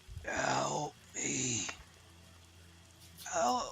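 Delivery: put-on raspy old crone voice, calling out from afar. Voicing a distant figure calling for help: raspy old woman's voice. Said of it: "a raspy, um, old woman's voice".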